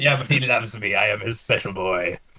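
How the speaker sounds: put-on pirate accent, put on and laid on. Speaking in character during a game: pirate accent. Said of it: "I'm picking up on your pirate accent".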